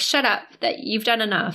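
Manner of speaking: plain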